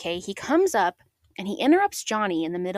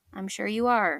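flat, unimpressed and very unenthusiastic. Retelling a scene where Baby answers a boast: imitating Baby unenthusiastically. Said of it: "Baby says very unenthusiastically".

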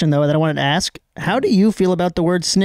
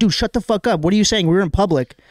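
ordinary talk, nothing marked

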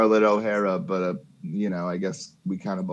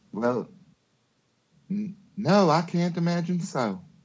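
put-on Southern belle voice, much higher pitch; 9 semitones higher than usual. In a tabletop role-play, a character answers a farmer's complaint: Scarlett O'Hara voice. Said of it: "gunslinger and murderess of extraordinaire. ... I was going for more Scarlett O'Hara, ... I was going for more Scarlett O'Hara".

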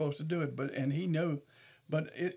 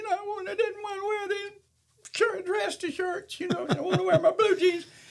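put-on kid whine, much higher pitch; 5 dB louder than usual. Recalling the kids packed in the car on the way to church; imitating a whining child. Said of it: "some would be doing their whining".

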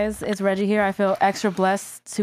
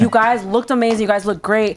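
normal talking voice

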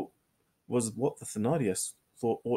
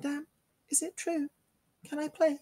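hesitant, timid, small, very high-pitched voice. Reading a novel aloud, a girl addresses Madame, timidly venturing a question. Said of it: "She ventured to ask".

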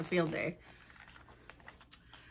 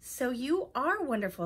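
plain reading voice

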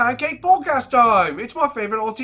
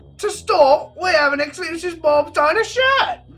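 bad, shoddy put-on British accent; 4 semitones higher, 3 dB louder than usual. Reading out a card from Gavin Free: shitty British accent as Gavin Free.

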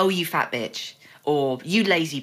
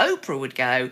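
normal talking voice

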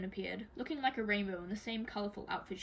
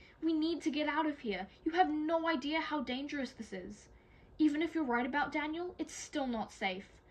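pitched-up, begging, pleading voice; 6 semitones higher, 3 dB louder than usual. Scarlett pleads with her sister Tella, begging. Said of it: "Scarlett begged".

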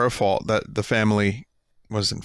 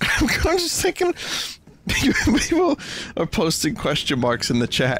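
giggling while speaking, higher pitch; 9 semitones higher than usual. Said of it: "why am I laughing".

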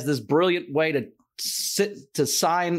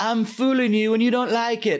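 put-on foreign accent, possibly British; 6 semitones higher than usual. Recalling a guy with an accent, the speaker quotes him, imitating his accent. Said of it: "he had an accent".

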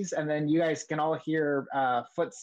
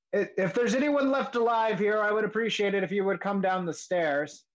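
blustering male voice, pitched up, calling out; 5 semitones higher than usual. Narrating a scene, voicing a man calling up from the floor below: blustery male voice. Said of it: "a blustery male voice".

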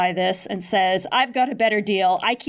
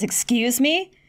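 put-on disgusted tone, higher; 4 semitones higher than usual. Retelling a scene between two characters, mock-disgusted reply. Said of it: "Moloculo is like disgusted".

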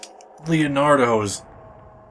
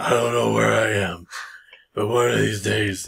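low-pitched monologue delivery. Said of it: "Liam Neeson style".

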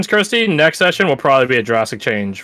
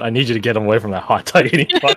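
solemn, grave, dead-serious delivery, pitched low; 4 semitones lower than usual. Joking about lines only said in D&D, delivering one: serious tone. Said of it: "In serious tone".

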